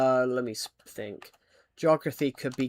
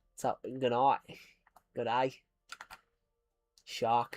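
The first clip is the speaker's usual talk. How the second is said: showy, put-on Australian accent; 4 dB quieter than usual. Speaker shows off the Australian accent they can do: Australian accent. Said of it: "I can do a good Australian accent myself".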